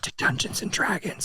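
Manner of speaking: hushed, barely voiced whisper. Explaining a film's full title to another speaker, whispering. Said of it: "I'll stop whispering now".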